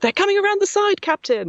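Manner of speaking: very high, shouted battle-style callout. Describing controlling drones in a game, he demonstrates: shouting game lines. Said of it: "I just do a lot of like shouting".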